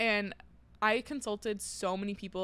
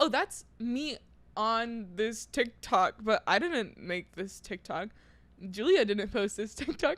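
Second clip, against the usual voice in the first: ordinary talk, nothing marked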